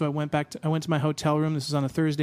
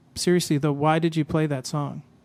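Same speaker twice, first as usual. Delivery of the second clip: put-on very serious, grave tone; 3 dB louder than usual. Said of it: "He was very serious".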